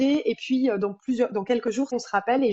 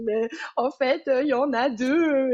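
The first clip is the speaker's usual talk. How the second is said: mock crying through tears, slow and drawn out; 3 semitones higher than usual. Speaker recounts a phone call to him, retelling words said crying. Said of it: "et donc en pleurant, je lui dis".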